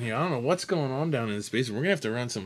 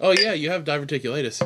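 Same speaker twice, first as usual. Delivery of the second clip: ordinary delivery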